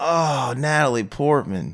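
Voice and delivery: disappointed, let-down tone. Imagining own reaction, same words in a different tone: disappointed. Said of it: "with a different tone. I'd be like, ... I'd be disappointed".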